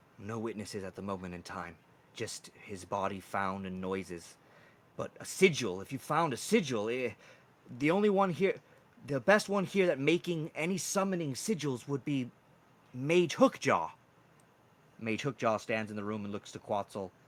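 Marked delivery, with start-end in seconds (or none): 0.2-13.9 hushed half-whisper. Voicing the queen answering a player quietly: half-whispering queen character. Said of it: "whispers back to you".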